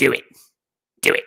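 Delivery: slow, rough, creaky, drawn-out coaxing voice. Urging someone to answer a phone call: Emperor voice. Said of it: "doing like the Emperor".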